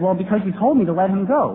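ordinary delivery

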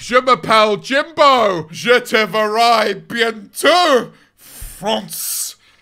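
put-on French with British accent. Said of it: "speak French with a very British accent".

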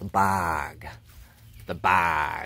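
very low put-on Chicago drawl, drawn out on "bog". Pointing out the bog, trying the word in a Chicago accent. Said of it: "What if I say bog with a Chicago accent?".

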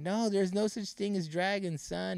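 high-pitched shouting. Retelling a story where the mom answers her son: imitating a shout. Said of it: "the mom is shouting back".

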